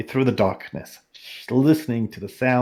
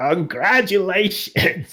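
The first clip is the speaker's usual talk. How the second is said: put-on crackling, crackly old woman voice; 8 semitones higher than usual. Narrator reading a wizened old woman greeting a visitor, crackly old woman voice. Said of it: "she crackles".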